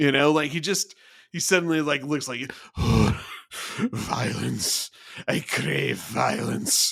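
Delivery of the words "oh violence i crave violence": very slow, creaky, rough, sinister, menacing, drawn-out voice. Imitating an officer who suddenly craves violence: imitating Reed, sinister. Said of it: "gets very sinister".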